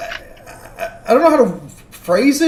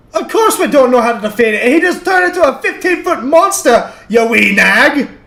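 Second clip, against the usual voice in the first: put-on Scottish-accented voice; 4 semitones higher, 4 dB louder than usual. In a role-play, answering whether they know how to defeat the monster: Scottish accent. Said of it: "did you turn Scottish?".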